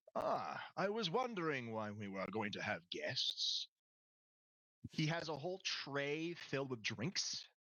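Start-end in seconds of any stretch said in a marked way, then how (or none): 0.1-3.6 polished, well-bred, very cultured, refined butler speech. A game master voices someone calling from the top of long stairs: very cultured voice. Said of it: "you hear a very cultured voice".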